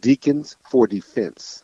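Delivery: each word carefully spaced. Repeating a name after another speaker asks: saying it slower. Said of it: "say it again slower".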